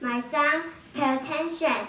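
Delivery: plain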